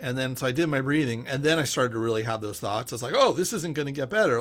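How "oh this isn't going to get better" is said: ordinary talk, nothing marked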